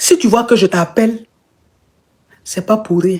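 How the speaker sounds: put-on small, weak little voice. Telling a story of a man phoning a woman from hospital, imitating his small voice. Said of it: "Avec une petite voix".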